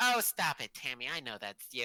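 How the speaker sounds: high, loud voice with a shrugging-off, dismissive tone. Recounting phone callers who insist she is Tammy: imitating the caller. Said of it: "and they're just like".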